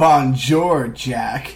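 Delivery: exaggerated, extremely bland and flat-sounding French pronunciation. Reviewer quoting a movie's CIA suit greeting Jack: whitest voice possible. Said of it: "in the whitest voice humanly possible".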